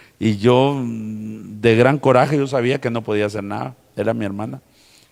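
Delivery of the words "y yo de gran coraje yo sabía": usual speaking voice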